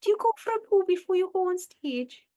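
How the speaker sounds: put-on slight Welsh accent, very high-pitched and loud. Repeating the line from a sketch that stuck with her: slightly Welsh-sounding voice. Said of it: "it sounds a bit Welsh".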